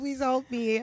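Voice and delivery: put-on crying, tearful voice. Retelling her own prayer over a missing shoe: imitating her own tearful prayer. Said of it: "I'm crying to the Lord".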